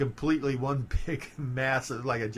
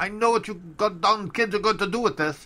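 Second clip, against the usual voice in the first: put-on heavy Polish accent, raised, high pitch; 8 semitones higher, 6 dB louder than usual. Imitate the man selling you canning wax at the counter, in Ziggy's really strong Polish accent. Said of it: "he had this really strong Polish accent".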